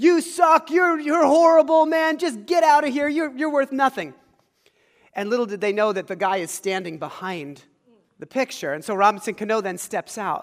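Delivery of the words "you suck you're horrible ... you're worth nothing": loud, pitched-up jeering, booing yell. Retelling people yelling at a life-size picture of a player, imitating people yelling. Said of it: "they're just yelling at this big".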